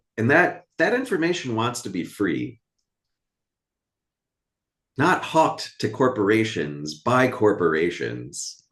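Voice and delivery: heated, agitated, worked-up outburst. A character who has been out of work for a while; worked up. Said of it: "I'm just worked up".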